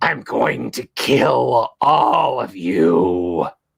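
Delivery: low, wicked cackling menace, "you" drawn out. A game master voices a psychic creature threatening the party, cackling evilly. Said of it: "cackles evilly".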